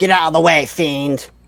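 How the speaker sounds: loud yelling.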